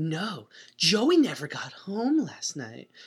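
badly acted line with odd, weirdly seductive tone. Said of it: "she always talks in a weirdly kind of seductive voice".

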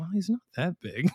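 muttered quietly under the breath. Retelling what a girlfriend said under her breath, Carrie muttering under her breath. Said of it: "under her breath".

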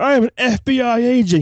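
put-on very slow, high, drawn-out, bad-movie-style yelling. A viewer mocks an actor's line from the original film, imitating an actor yelling. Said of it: "He's yelling".

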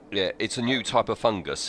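plain

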